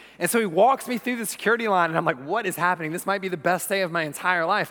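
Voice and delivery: normal talking voice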